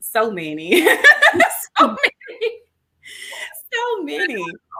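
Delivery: high, loud laughing delivery.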